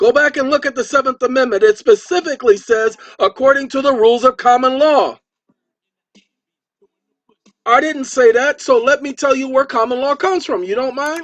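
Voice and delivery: sustained, loud, high-pitched ranting shout. Lecturing about the rules of common law: yelling. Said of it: "if you stop yelling at us".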